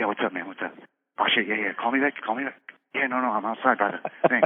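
mock hushed, quiet voice. Speaker acts out how the listener used to answer the phone, imitating hushed phone talk. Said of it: "mostly over hushed tones".

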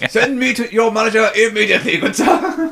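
mock posh angry voice. Showing how they get posher when angry, scolding gunther, mock posh angry voice. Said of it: "when I get angry, I get posher?".

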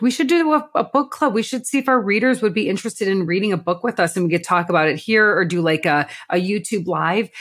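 normal talking voice

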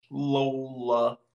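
very slow, long, unhurried, drawn-out word. Naming the flying car Lola during a trivia recap, said very slow. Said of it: "Why did you say that so slow?".

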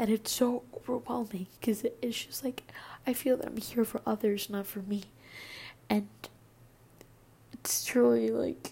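very loud, high, tearful crying speech. Opening up about wanting help, the speaker talks while crying. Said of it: "I'm crying right now".

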